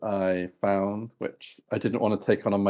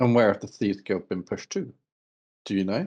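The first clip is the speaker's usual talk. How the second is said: put-on Welsh-accented tavern keeper voice. Game master voicing the tavern barkeep talking to the players, welsh accent. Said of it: "but he is Welsh in his accent. / the man pulls out 2 wooden tanards and he plops them down in front of you, / Barkeep, / but he is Welsh in his accent".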